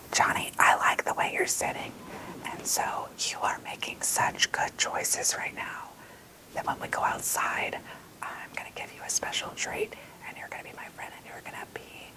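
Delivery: whispering. Showing how to quietly praise one child to calm a classroom: whispering to a child. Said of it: "just start to whisper to somebody".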